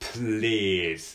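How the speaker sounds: held opening consonants of please. Showing how to sound more English, says please with a drawn-out pl. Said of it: "ちょっと溜めて言う感じ".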